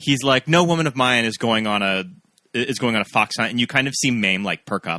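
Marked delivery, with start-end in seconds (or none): none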